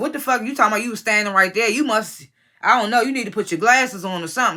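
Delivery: ordinary talk, nothing marked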